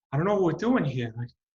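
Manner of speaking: breathy, nervous voice at very high pitch. Doing an impression of Mark Wahlberg: breathy nervous Mark Wahlberg impression. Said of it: "very breathy, like, nervous".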